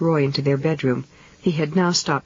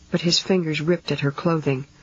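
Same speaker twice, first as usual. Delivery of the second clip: plain reading voice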